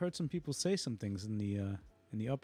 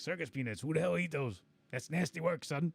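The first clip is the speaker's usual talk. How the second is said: hoarse, high, raspy stoner voice; 5 semitones higher than usual. Describing a guy who rates old-time things, imitating him in a raspy pot-smoker voice. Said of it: "he's got the raspy pot smoking voice".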